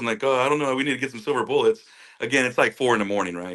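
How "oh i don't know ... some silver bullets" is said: put-on laughing while talking, higher pitch. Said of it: "we start laughing like".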